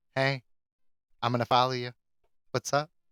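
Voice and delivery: eerie creature-like voice. Acting out a creepy creature that follows people home: voicing a creepy stalker creature. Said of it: "this creepy one that's just like".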